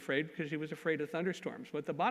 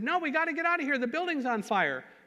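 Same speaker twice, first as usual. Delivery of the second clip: play-acted high, shrill, frantic, panicked shouting; 11 semitones higher, 6 dB louder than usual. Retelling someone urging escape from a building on fire: imitating someone shouting. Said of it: "he started shouting".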